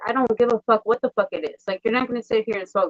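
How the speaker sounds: furious snapping. Retelling confronting people smoking at home with a baby upstairs: retelling own furious outburst. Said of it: "So I go crazy".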